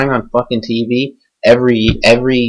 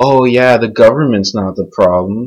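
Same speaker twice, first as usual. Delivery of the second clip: mocking, sarcastic delivery. Ranting about the government, speaker says a line in sarcastic tone. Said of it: "It's in a sarcastic voice".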